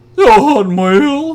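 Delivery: voice cracking. Teaching japanese words, repeating the word for meal, with the voice cracking. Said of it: "Sorry, my voice cracked".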